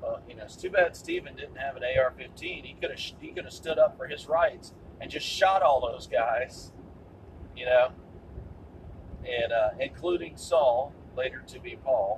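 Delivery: normal talking voice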